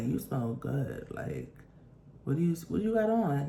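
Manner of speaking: low, soft, sneaky murmur. Retelling what a woman riding along said to the driver, in a low tone. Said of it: "She says it in like a low tone".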